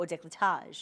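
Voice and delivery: ordinary delivery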